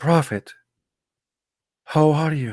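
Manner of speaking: meek, hushed voice. Explaining how to address the Prophet, the speaker demonstrates in a lowered, subdued voice. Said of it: "You have to lower your voice".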